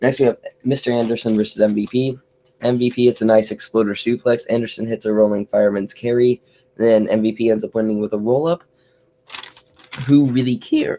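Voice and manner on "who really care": cracking, breaking voice. Reviewing a wrestling match, the speaker's voice cracks. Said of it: "Voice crack".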